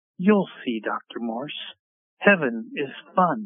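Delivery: very condescending, patronizing, talking-down tone. A doctor retells a woman patting his wrist and answering him, imitating condescending tone. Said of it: "she just sort of says very condescendingly".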